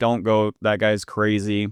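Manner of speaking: ordinary delivery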